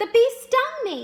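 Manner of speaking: highly emotional cry, shrill, very high and loud. Teaching punctuation, demonstrating an exclamation line with lots of emotion. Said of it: "Notice how I had a lot of emotion in my voice?".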